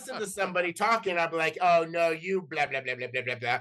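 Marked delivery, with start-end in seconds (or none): 1.6-3.6 put-on sarcastic under-breath muttering. Describing his habit of commenting on others' conversations, doing mock sarcastic muttering. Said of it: "sarcastic commentary under my breath".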